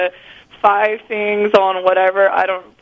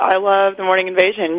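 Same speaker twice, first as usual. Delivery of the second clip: ordinary delivery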